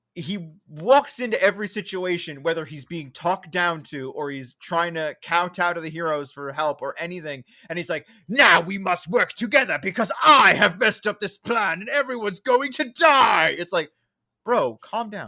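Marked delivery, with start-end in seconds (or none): 8.2-13.5 loud, high, menacing, cackling villain voice. Retelling how the villain talks in every scene: menacing Robotnik voice. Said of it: "He is menacing, cackling bad guy every single line".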